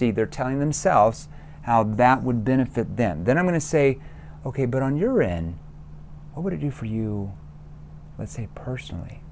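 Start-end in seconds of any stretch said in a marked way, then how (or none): 4.4-9.2 lower, quieter, concerned tone. Showing what to say next, in a lowered, concerned tone. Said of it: "you lower your tone into that concern tone".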